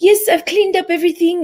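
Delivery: put-on very high-pitched English spoken with a French accent. Retelling what a domestic helper said: imitating English speaker with French accent. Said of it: "with this English accent, with a French accent when she speaks English".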